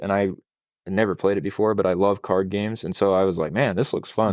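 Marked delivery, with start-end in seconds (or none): none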